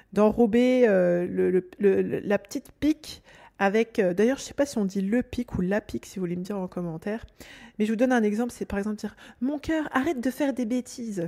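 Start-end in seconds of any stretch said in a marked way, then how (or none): 9.4-11.3 syrupy, sweet, honeyed affectionate voice. Giving an example of something said to a child, in a sweet honeyed tone. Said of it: "c'est dit comme ça avec amour, avec un, un, un- un ton euh, mielleux".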